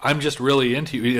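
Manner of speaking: ordinary talk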